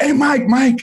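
play-acted screamed call, shrill and very high-pitched. Retelling a player running up the steps to a departing star: imitating someone screaming. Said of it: "he's screaming".

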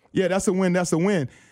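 normal talking voice

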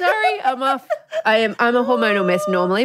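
high, tearful laughing through tears.

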